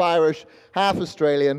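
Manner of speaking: ordinary talk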